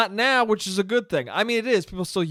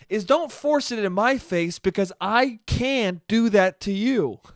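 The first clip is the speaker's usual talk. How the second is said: usual speaking voice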